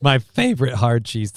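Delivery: voice breaking in pitch, cracking mid-phrase. Repeating a favorite cheese while chatting: voice cracking. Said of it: "Thank you, voice crack".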